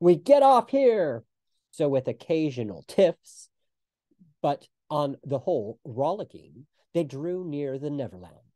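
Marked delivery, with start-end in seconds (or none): 0.0-1.2 very high-pitched, loud, commanding call. Narrator reads Peter's line, cried out in his captain voice. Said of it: "he would cry in his captain voice".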